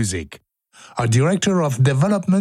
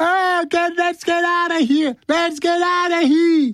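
mock, very high hollering shout. Speaker recounts someone in the middle of the fire, imitating Sam yelling. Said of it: "you can hear Sam yelling".

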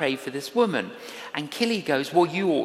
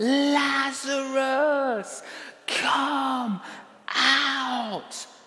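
loud, high, full-throated shout, "out" drawn out; 9 semitones higher than usual. Speaker retelling how Jesus called Lazarus to come out: retelling a loud shout. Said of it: "No, a loud shout".

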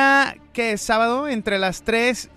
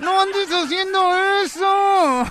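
mock-angry, through clenched teeth, pitched much higher; 9 semitones higher than usual. The speaker scolds herself as Helen pulls her ears, mock-angry mom through clenched teeth. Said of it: "Con los dientes cerrados como mamá enojada".

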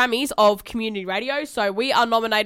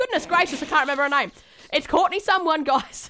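flustered, frazzled, high, panicky fumbling ramble; 5 semitones higher than usual. A host forgets the name of the person being congratulated, flustered, panicking. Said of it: "Oh my God, I'm panicking".

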